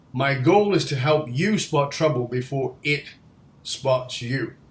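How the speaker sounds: ordinary delivery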